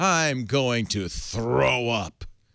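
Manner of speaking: slow, dramatic reading voice.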